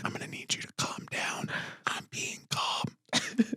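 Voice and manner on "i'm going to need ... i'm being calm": soft, unvoiced whispered speech. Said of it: "everything was whispered".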